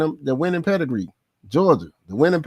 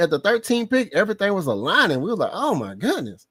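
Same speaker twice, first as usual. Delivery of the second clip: usual speaking voice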